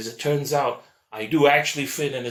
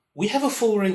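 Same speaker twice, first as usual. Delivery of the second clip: put-on British accent; 9 semitones higher than usual. Imitating a local doctor who speaks with a british accent. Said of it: "He speaks with a B B C, like, British accent".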